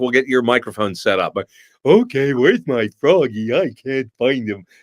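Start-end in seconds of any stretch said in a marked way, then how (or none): 1.8-4.6 put-on dopey, dim-witted character voice. Asked to do a quick dumb voice for a mic check: dumb voice. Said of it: "This is about as dumb as I can sound".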